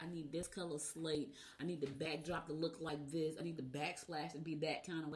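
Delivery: ordinary delivery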